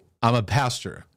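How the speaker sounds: plain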